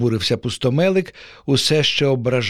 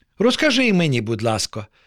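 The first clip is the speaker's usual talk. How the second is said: ordinary delivery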